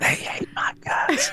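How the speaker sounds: hushed, soft, breathy, confiding whisper. Speaker says they will whisper a line to the listener: whispered. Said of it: "I'm going to whisper it to you".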